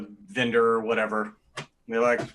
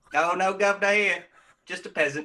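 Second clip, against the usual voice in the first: bad fake put-on English accent; 8 semitones higher than usual. A speaker in a story scene answers a character, in a bad fake english accent. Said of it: "try to talk to an English guy with a shitty English accent".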